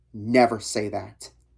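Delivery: harsh, low voice. Narrator reads the driver's reply to the narrator, low and harsh. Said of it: "His voice whipped out, low and harsh".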